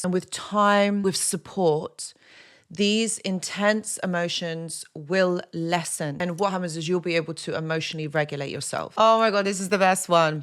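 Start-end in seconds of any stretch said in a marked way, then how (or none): 9.0-10.4 sarcastic, ironic, tongue-in-cheek aside. Introducing the next point with a remark: sarcastic. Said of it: "I'm just being sarcastic here".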